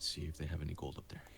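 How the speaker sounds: very quiet, hushed, low whisper. Player's character tugs the sheets and whispers in the other's ear, whispering. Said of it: "and I just whisper in your ear".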